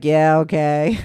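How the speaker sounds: put-on depressed tone. Mimicking the other person's reply back to them, imitating a depressed tone. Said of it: "don't sound so depressed".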